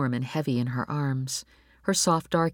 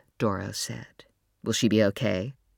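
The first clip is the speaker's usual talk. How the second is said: plain reading voice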